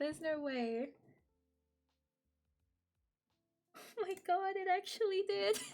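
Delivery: high, choked-up voice fighting tears, disbelieving. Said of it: "I'm not crying".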